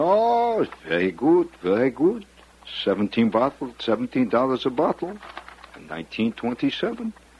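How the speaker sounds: high, swooping fake French over a Bronx accent. Retelling the waiter's reply about the wine: mock French with Bronx accent. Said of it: "Normandy French with a strong Fordham Road accent".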